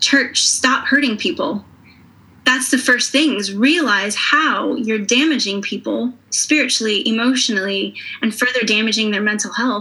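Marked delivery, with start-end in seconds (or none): 0.0-1.6 stern, firm voice. Addressing the church, which the speaker loves, say it stern and firm. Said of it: "I also want to say very sternly and firmly".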